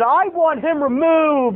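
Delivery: high-pitched, slow, imperious voice. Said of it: "he said".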